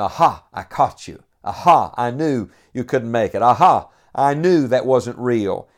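sneering, cynical, skeptical, sarcastic jeering tone. Imitating people who taunt with snide remarks: imitating a sarcastic cynical taunt. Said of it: "skeptically say such a thing with sarcasm in their tone".

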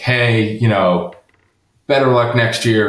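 put-on sarcastic tone. Retelling someone's jab at the grandfather: imitating a sarcastic remark. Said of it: "in, like, a real sarcastic way".

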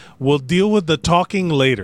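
ordinary talk

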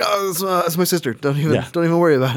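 high, put-on very scared voice, stumbling over words. Joking about Abraham repeatedly calling his wife his sister: imitating afraid Abraham. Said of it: "he gets really afraid".

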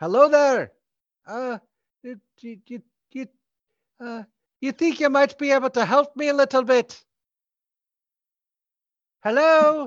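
very high-pitched, shrill, loud calling voice. Voicing a distant voice asking for help: calling out. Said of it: "you hear a voice call out".

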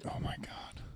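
very soft, under-breath whisper.

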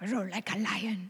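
put-on slight German accent. Repeating a quote by Reinhard Bonnke: Reinhard Bonnke German accent. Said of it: "in his little German accent".

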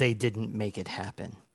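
voice-over narrator voice. Acting out the narrator who comes in at the end: narrator's voice. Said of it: "Narrator's voice comes in".

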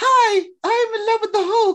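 very high-pitched dubbed voice. Mocking how the replacement actress voiced Betty: imitating the new Betty voice. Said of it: "whichever actress they got to do, to do her voice in this was like".

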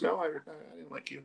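quiet, matter-of-fact bluntness. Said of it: "he said it so matter of fact".

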